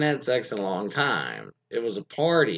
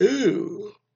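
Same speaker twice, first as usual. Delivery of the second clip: ooh drawn out through a yawn, pitched up; 11 semitones higher than usual. Telling a story about hitting on a woman, quoting her loud reply, yawning. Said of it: "I had a yawn when I said, "Ooh."".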